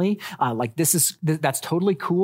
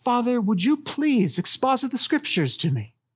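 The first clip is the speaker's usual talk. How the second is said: very polite, well-mannered, pitched-up voice; 8 semitones higher than usual. Picturing a daughter at family devotions, imitating Harper politely asking. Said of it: "politely asking".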